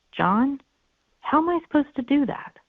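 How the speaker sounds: gentle, curious tone. Demonstrating a phrase to say after a long silence, in a soft, curious tone. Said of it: "a really soft, curious tone phrase".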